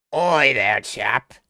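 put-on British accent, very loud and booming. Asking the chat to rate their impression, in a British accent impression. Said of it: "Can you please rate my British impression?".

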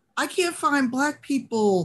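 clueless, innocent voice.

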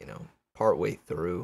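ordinary delivery

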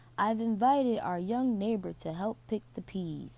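usual speaking voice

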